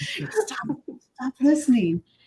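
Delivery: high, hushed, secretive whisper. Recalling talking to a phone that is always listening: retelling a whisper. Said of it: "I'm like whispering away from my phone".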